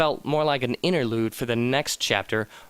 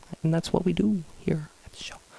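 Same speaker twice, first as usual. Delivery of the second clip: hushed, voiceless half-whisper; 3 semitones higher, 3 dB quieter than usual. Host talking about what they do on the show, half-whispering. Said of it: "I'm whispering".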